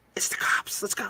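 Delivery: hushed, soft, breathy whisper. Retelling a male voice heard on a cemetery recording, in a whisper. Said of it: "you hear this male voice whisper".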